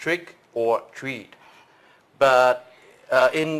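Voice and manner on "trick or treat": slow, deliberate, drawn out, each word spaced. Showing a listener how the Halloween phrase sounds, spoken slowly. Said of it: "If you speak it slow".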